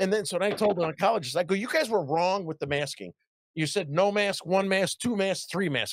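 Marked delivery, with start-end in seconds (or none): 1.5-5.9 play-acted, snarky, needling, smart-aleck sarcastic tone. Retelling what was said to the oncologist: retelling own smart-ass remark. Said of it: "I was being smart ass".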